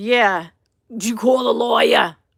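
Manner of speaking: put-on raspy, loud voice with Jersey accent. Speaker acts out what a woman said, imitating a raspy-voiced woman. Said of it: "she had like a raspy voice".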